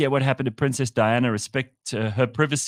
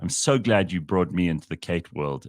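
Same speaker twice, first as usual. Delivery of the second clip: thick mock gladness, dripping with heavy sarcasm; 7 semitones lower than usual. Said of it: "I say this with dripping sarcasm".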